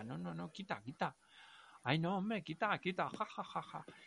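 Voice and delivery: protesting, pushing away, broken up by laughter. Recounting pushing someone away while drunk, retelling a laughing protest. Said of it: "entre risas".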